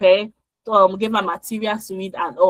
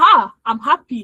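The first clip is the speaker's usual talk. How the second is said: put-on, emphatic, happy tone, as if obvious; 3 semitones higher than usual. Retelling a graduate's answer when asked if she was happy: imitating Sandra's happy reply. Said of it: "the way she said".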